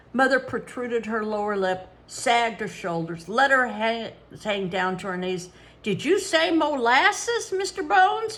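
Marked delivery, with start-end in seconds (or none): 5.9-8.4 squeaky, complaining, querulous falsetto with rising pitch. Mother answers mister bones, who just called her boss, in a squeaky querulous falsetto. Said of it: "She squeaked in a querulous falsetto".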